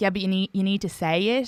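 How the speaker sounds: ordinary talk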